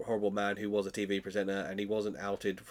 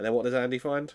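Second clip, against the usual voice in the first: plain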